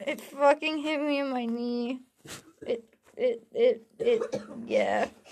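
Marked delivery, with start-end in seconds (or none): 2.7-4.4 stammering, with a lower and louder voice. Complaining that something hit the knee, stuttering. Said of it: "I'm stuttering".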